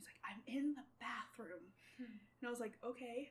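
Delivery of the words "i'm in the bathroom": mock-whispering, put-on whisper. Retelling a grandpa's phone call from the bathroom, imitating a whisper. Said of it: "he's whispering on the phone".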